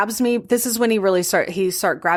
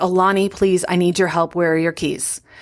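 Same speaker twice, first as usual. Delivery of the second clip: earnest, begging, pleading voice; 2 semitones lower than usual. Retelling pleading with Alani for help to escape: retelling a plea. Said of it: "I just begin pleading with her".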